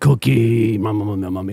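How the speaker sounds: put-on monster voice. Joking that a racing driver is a Cookie Monster: Cookie Monster voice. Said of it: "Greg Cook's a Cookie Monster".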